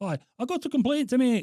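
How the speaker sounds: put-on Scottish accent. Prank calling an air force base: put-on Scottish accent. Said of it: "You putting on a Scottish accent?".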